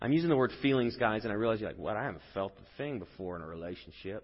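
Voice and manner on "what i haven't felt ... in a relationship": put-on quiet, low, hushed Texas accent under the breath. Voicing the audience's reaction to them, the speaker slips into a texas accent. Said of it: "that was like a Texas accent".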